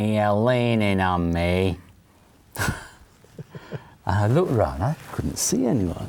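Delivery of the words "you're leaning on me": hard, very nasal, slow drawl. Recounting an unseen voice speaking to him while he leaned back drinking, hard, nasal voice. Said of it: "he had a very hard, very nasal voice".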